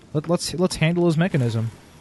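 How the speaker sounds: ordinary delivery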